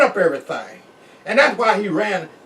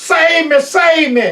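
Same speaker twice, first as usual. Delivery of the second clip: loud, high, long drawn-out hollering cry; 8 semitones higher, 6 dB louder than usual. Retelling the mess sergeant clinging on after lightning: imitating someone hollering. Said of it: "he was squeezing me and hollering".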